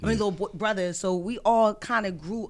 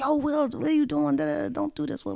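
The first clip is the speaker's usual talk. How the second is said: high, rough, acted-out scolding yell; 8 semitones higher than usual. Recalling a man blasting music outside church, the speaker imitates his mom yelling. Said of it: "his mom just coming out and just like yelling at him".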